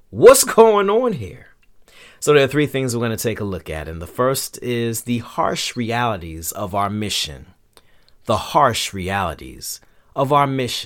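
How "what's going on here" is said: very high, loud, exasperated outcry. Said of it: "goes back to God with his hands out like".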